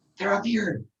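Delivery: loud, high-pitched stage whisper. Voicing a character calling to allies while hiding: loud whisper. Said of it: "whisper loudly".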